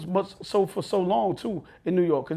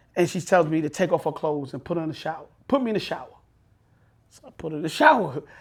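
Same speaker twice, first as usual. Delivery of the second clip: plain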